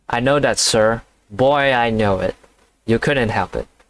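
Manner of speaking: plain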